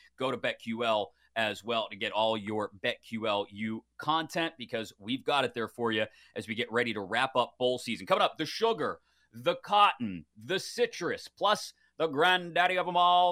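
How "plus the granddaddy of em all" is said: terrible, clumsy put-on play-by-play announcer voice, pitched higher. Previewing the upcoming bowl games: terrible Keith Jackson voice. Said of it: "That was a terrible Keith Jackson voice".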